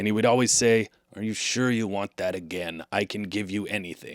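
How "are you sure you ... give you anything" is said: tired-out, weary little magic creature voice, acted out. Retelling a childhood wish story, voicing the tree creature: imitating an exhausted magic creature. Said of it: "he was always exhausted".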